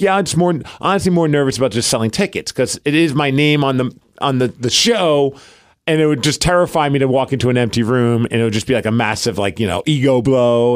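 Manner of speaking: ordinary delivery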